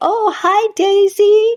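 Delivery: put-on sweet, loving, very high-pitched baby talk. Speaker retelling how Josh greeted a dog during their phone calls, Josh's baby puppy voice. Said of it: "shift his voice to that baby puppy voice".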